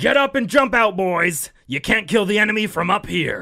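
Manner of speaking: very high, very loud rallying shout. Reading out a grizzled veteran colonel's quote: Colonel Morris voice. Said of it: "I like your interpretation".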